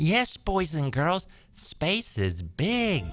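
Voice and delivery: put-on condescending, talking-down tone, as if to small children. Mocking the vice president speaking about space: mocking condescending Kamala Harris impression. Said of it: "nearly as condescending or superior as Kamala Harris did".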